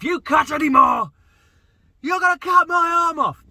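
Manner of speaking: very high, very loud, shrill, frustrated screaming. Retelling how a woman screamed at him while he cut the hedge, retelling a scream. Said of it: "she screamed at me".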